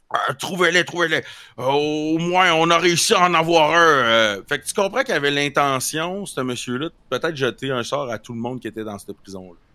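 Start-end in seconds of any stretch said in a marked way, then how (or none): 0.1-3.7 mumbling as if mouth full, higher and louder. Voicing an unseen man giving orders: voice of a man with something in his mouth. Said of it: "de quoi dans la bouche en tout temps".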